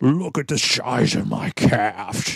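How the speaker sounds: slow, drawn-out, admiring movie-star voice. Retelling what was said on seeing an old picture: Sean Connery impression. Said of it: "anytime I do a Sean Connery impression".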